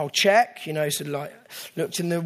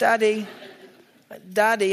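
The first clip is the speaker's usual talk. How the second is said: put-on steady, calm, higher-pitched child's voice calling out; 5 semitones higher than usual. A father retelling his child calling him at 4 a.m., imitating child's unpanicked calling. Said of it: "it wasn't a panicked voice".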